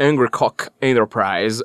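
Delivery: low, heavily put-on, forced American accent. A speaker pronounces a company name for listeners: forced american accent. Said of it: "com aquele sotaque americano bem forçado".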